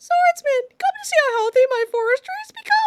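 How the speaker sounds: very high-pitched character voice. Voicing a line addressed to the swordsman, in a Makar voice. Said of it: "I'll do the Makar voice for this".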